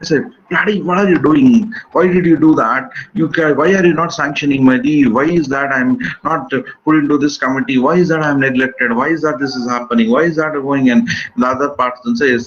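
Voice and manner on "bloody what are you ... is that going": heated, indignant, angry rant. Showing how someone shouts at a colleague in their office: acted-out shouting at someone. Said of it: "You shout".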